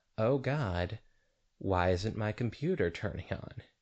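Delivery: ordinary delivery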